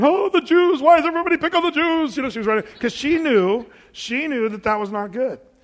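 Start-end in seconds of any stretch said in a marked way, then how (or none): 0.0-2.2 high, loud, fast, frantic panicked wail. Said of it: "the cabin going".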